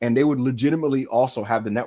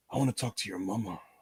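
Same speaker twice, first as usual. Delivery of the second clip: very quiet, sinister, menacing mob boss voice; 2 semitones lower, 10 dB quieter than usual. Quoting a man talking to someone in front of a crowd, sinister mob boss voice. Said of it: "turning into like this sinister mob boss".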